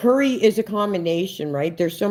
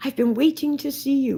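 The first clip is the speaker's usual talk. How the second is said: sweet, small put-on voice, pitched up; 8 semitones higher than usual. Retelling how a lady in the laundry room greeted the speaker, sweet little voice. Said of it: "in this sweet little voice".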